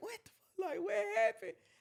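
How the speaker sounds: very high, tearful crying outburst. Retelling standing on the floor after the club was raided: retelling crying. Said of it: "I'm crying".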